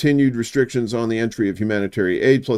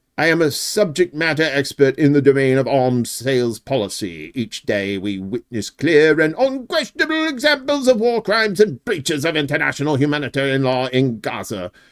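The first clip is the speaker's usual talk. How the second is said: bad put-on British accent with swooping pitch; 3 semitones higher than usual. Reading aloud a statement by an arms sales policy expert, in a crappy British accent. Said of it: "that was me doing a crappy British accent".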